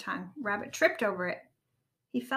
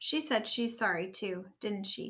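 ordinary delivery

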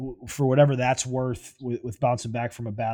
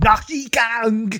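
very high, very loud put-on German accent; 11 semitones higher, 8 dB louder than usual. Act out some dude in the front row at a football game in Germany, doing a German impression. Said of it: "That's my German impression".

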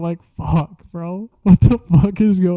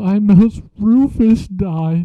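very slow, play-acted, drawn-out sobbing wail; 2 semitones higher than usual. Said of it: "this girl's crying her eyes out".

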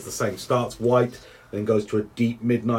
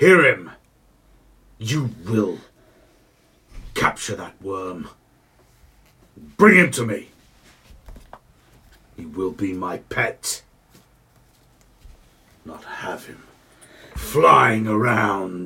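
very deep, earth-shaking, rumbling giant voice; 4 dB louder than usual. A giant on an ice throne commands a smaller warrior giant, deep rumbling voice. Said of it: "And there's this thick ice throne that seems to have been placed on whatever was there previously. And in it sits the largest creature you've ever seen, / And in it sits the largest creature you've ev".

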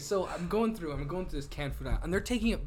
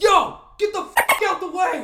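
very high, very loud, shrill drawn-out yell; 13 dB louder than usual. Retelling snapping at a family blocking the Walmart aisle: retelling a super-loud yell. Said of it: "Like super loud in Walmart".

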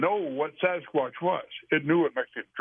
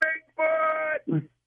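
high, loud, startled yell at full volume. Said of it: "she just yelled out as loud as she could".

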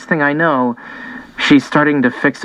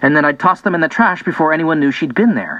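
plain

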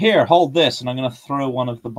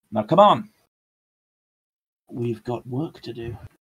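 dark, threatening, sinister, menacing villain voice. Urging companions on in character: sinister-sounding voice. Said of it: "That sounds far too sinister".

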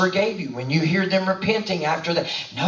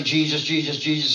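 plain

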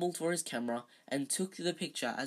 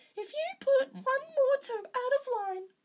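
shrill, piercing, very high-pitched voice; 4 dB louder than usual. A rival taunts a classmate by mimicking the classmate's mother: shrill piercing voice imitating Mummy. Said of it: "He put on a shrill, piercing voice".

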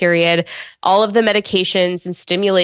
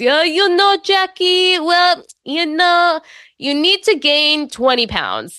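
put-on Israeli accent with raised pitch; 10 semitones higher than usual. Speaker retells what their IVF specialist said to them; imitating an Israeli accent. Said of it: "So in his Israeli accent".

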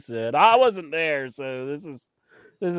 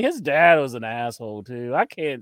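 ordinary talk, nothing marked

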